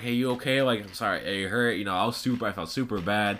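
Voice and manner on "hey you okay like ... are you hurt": plain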